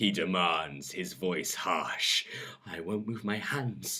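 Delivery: plain reading voice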